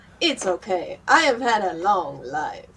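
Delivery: put-on super thick, heavy Hungarian accent, laid on thick. Speaker retells what a man said after bad news in hospital, thick Hungarian accent. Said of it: "super fucking thick Hungarian accent".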